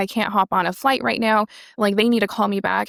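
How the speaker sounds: acted-out panicked crying. Retelling a complication after surgery, imitating panicked crying. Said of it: "I was panicking, I was, like, crying, I was like".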